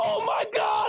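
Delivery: put-on very high, full-on shouted scream. Telling a story about a bandmate jumping off a trailer, retelling his own scream. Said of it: "I'm like screaming this".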